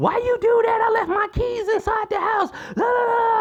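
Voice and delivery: mock very high, screaming outburst. Retelling how mom reacted to the locked door: imitating mom screaming. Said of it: "she started screaming like".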